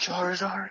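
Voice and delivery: gentle, soft delivery. Answering a request to say a pick softly: said softly. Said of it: "you wanna say something real softly?".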